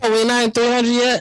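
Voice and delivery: very high, loud, blaring voice. Asking the others whether they have reached episode three hundred: loud voice. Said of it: "you sound a little loud there".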